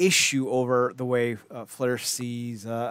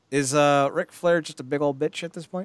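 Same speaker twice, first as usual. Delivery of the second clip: usual speaking voice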